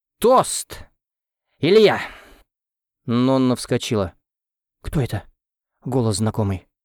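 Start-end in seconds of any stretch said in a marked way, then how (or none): 4.8-6.6 nervous, anxious whisper. Narrating Nonna asking who is knocking at the door, in a nervous whisper. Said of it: "зашептала она нервно".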